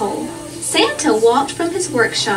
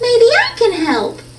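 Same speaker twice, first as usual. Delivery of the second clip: very high, small piping voice; 9 semitones higher, 4 dB louder than usual. Narrating a christmas story, someone offers santa help: high voice. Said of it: "said someone in a high voice".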